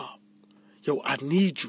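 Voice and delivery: hushed whisper under the breath. Retelling a friend's early-morning phone call, imitating him whispering. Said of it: "he whispered like".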